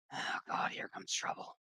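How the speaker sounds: very hushed, low, whispered mutter under the breath. A character approaching the table mutters to the others: low muttering. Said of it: "mutters to the others, like lowly".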